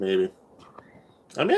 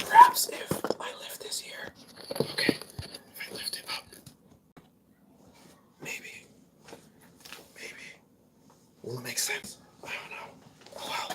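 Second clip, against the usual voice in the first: soft, breathy whisper. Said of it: "Why am I whispering?".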